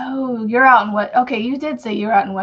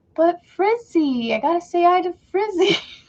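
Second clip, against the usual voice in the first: put-on sweet, high-pitched, cute small little-boy voice; 8 semitones higher than usual. Retelling what the little one said before bed: imitating son's high-pitched little boy voice. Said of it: "His little high-pitched, cute little".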